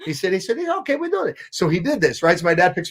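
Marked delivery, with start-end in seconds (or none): 0.6-1.4 Italian barber voice, pitched way up. Retelling what a barber said about a haircut: imitating an Italian barber. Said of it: "he was this Italian guy".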